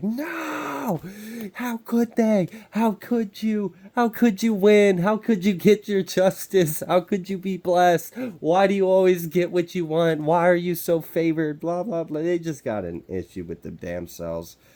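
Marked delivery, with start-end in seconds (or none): 0.0-12.2 play-acted very high, furious shriek, drawn-out no. Picturing someone jealous of another's win: imitating someone screaming mad. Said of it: "screaming, like, so mad".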